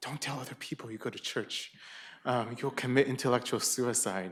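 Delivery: quiet, confiding, very whispery, hushed voice. Speaker quotes what a friend told him, imitating a very whispery voice. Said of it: "he said in a very whispery voice".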